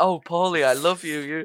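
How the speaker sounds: put-on subservient woman's voice. Describing the voice Paulie picks for his tech, imitating it as a subservient lady's voice. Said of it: "some subservient lady's voice".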